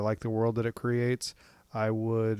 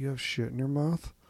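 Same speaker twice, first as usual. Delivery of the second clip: hushed, half-whispered aside; 3 semitones higher than usual. Retelling a half-whispered aside to a brother while mom yells: half-whispered. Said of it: "I was just whispered".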